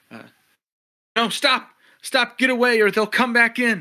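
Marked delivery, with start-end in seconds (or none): 1.2-3.8 shrill, very loud, high-pitched yell. Voicing a character who yells out into the cave: NPC yelling out into cave. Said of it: "just kinda yells out into the cave too".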